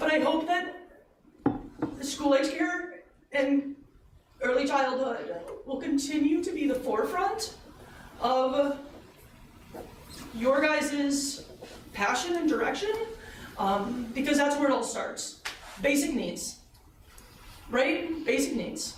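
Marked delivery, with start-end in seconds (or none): 0.0-15.4 emotional, pitched high, breaking into a laugh. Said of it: "gonna get emotional".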